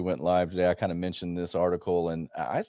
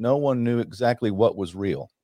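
ordinary talk

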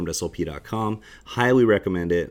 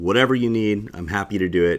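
ordinary talk

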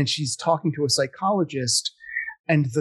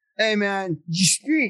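mock drunk voice, higher; 5 semitones higher than usual. Retelling what groups of drunk people said: imitating drunk people. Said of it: "groups of drunk people going".

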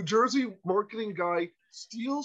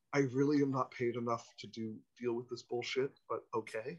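expressionless, low, monotone New York deadpan; 8 semitones lower, 7 dB quieter than usual. Retelling the maitre d's unspoken reaction: imitating a new york dead-eyed deadpan. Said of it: "that New York dead-eyed kind of".

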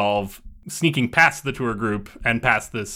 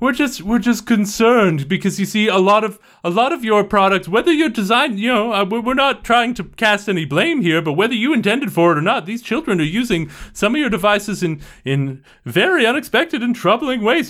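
big echoing leader voice, higher and louder; 11 semitones higher, 5 dB louder than usual. Voicing a group leader heard from the front: big echoing voice. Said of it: "the voice I was doing a minute ago".

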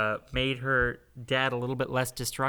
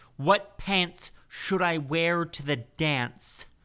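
angry, slow, drawn-out, high-pitched delivery; 5 semitones higher than usual. Trying again, the speaker does an angry John Malkovich impression. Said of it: "I am going to do like angry John Malkovich".

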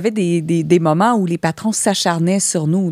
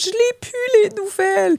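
very high-pitched, slow, weepy, tearful crying voice. Retelling being taken off the air, imitating her own crying. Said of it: "Pourquoi tu pleures ?".

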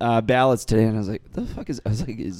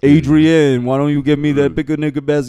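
put-on mumbling tough-guy voice, louder; 2 semitones higher, 8 dB louder than usual. Joking that Stallone is Yogi Bear: Sylvester Stallone impression. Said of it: "do a Sylvester Stallone impression".

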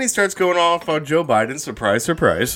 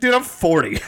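ordinary delivery

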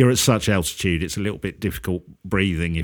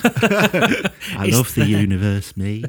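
very slow delivery, each word drawn out. Joking that the other speaker sounds like a scientist: Brian Cox impression. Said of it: "that's a very good impression".

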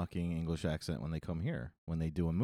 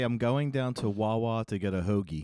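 normal talking voice

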